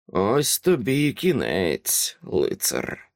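sweet, sugary, purring demon voice. The demon taunts the disarmed old knight, in a sweet purring demon voice. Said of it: "промуркотів солодкий голос демона".

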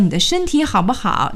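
plain

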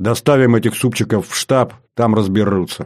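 plain

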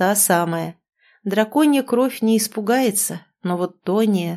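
ordinary delivery

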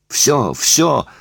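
heated, sudden cutting-in. Mary cuts off the man who is talking to her about Pavel, hotly interrupting. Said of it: "прервала она запальчиво".

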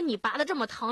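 plain

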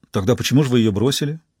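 usual speaking voice

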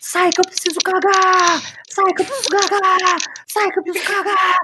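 high, desperate yelling.

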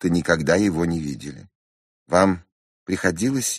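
ordinary delivery, nothing marked

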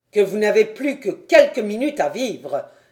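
loud, merciless, pitiless cry. Answering an enemy's question, crying out pitilessly. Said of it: "s'écria impitoyablement la Fontenelle".

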